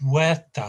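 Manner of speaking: puerta with the weight on first syllable pue-. Explaining Spanish word stress with puerta, door: stress on first syllable of puerta. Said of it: "stress at the beginning".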